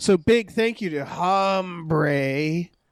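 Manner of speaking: very slow, put-on grizzled drawl. Host thanking producers in this week's put-on voice: grizzled voice. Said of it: "That's my grizzled voice this this week".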